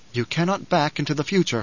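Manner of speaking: plain reading voice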